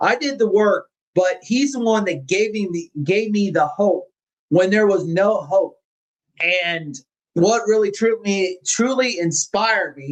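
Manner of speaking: earnest, moved, with feeling welling up. Someone credits Doctor Barry with giving them hope when there was none, getting a little emotional. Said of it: "I'm getting a little emotional".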